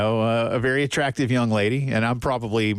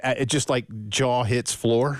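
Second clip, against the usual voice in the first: ordinary delivery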